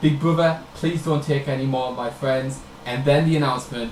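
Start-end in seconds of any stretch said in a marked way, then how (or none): none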